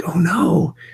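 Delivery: soft, hushed, slightly high whisper. Retelling the whispered reply to a student: retelling own whisper. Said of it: "kinda whispering back like".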